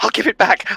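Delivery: muttered whisper under the breath. Voicing a wounded character crawling up the stairs: whispering under his breath. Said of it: "now whispering under his breath".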